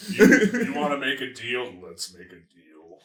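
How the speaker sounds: put-on gravelly, seedy, shady voice. Speaker demonstrates the voice he gave the tavern keeper, gravelly seedy voice. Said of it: "my voice got more and more like, gravelly".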